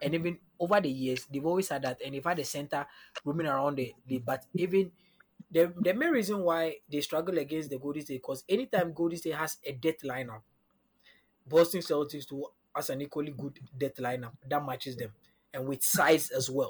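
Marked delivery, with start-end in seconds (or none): 15.5-16.7 the word size slowed down and leaned on. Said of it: "Emphasis on the size".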